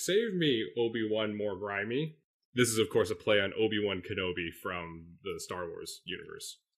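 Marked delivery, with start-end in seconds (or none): 0.0-2.2 stiff, mechanical robot voice. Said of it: "in a C three P O voice".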